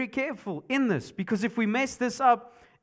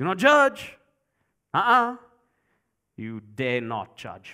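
mocking arrogant attitude, pitched lower; 9 semitones lower, 4 dB louder than usual. Imitating how people quote the verse: imitating an arrogant tone. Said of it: "kind of attitude, kind of arrogant way".

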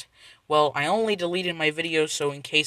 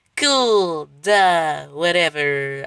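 fake little kid voice, louder; 6 dB louder than usual. Saying a catchphrase to mark the video made for kids: put-on six-year-old voice. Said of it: "stupid six-year-old, old crappy voice".

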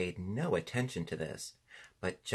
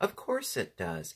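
ordinary delivery

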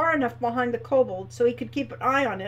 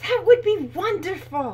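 exclaimed, with pitch raised; 6 semitones higher, 4 dB louder than usual. Reading a character replying to a wish to visit her farm: exclaimed. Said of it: "exclaimed Hilda".

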